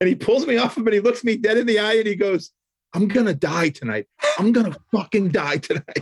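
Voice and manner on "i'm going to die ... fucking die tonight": put-on bawling sobs, higher pitch. Retelling what a crying old friend said after hugging: imitating someone bawling. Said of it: "instantly started bawling".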